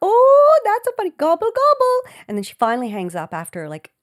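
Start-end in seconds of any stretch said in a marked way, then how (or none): 0.0-2.1 put-on Minnesota accent, higher and louder. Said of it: "I'm trying to do Minnesota".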